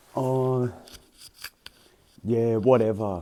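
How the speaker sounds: put-on sulky, moody man voice. Acting out how a man might reply: imitating a moody man. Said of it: "moody post-Kuma kinda energy where he's like".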